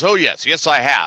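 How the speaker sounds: mock pompous, distinguished-sounding voice. Retelling a talk with Ray, imitating a distinguished-sounding voice. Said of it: "he's trying to sound all distinguished".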